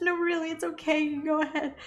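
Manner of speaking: acted crying voice, teary yet reassuring. Retelling to a friend how, while upset before a medical shot, you reassured the person helping you. Put-on teary reassurance. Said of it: "I'm crying".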